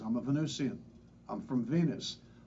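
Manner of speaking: normal talking voice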